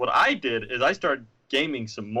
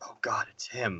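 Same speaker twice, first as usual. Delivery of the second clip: hushed, very quiet, barely-there whisper; 3 semitones lower, 10 dB quieter than usual. Retelling how he whispers the line in the Bourne film, whispering the line. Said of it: "he like whispers it".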